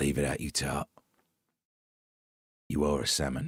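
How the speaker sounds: deep, low, menacing and regal voice. Imagining the king threatening someone in private: threatening King Charles voice. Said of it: "But if a king, you know, all that beheading-y stuff, goes".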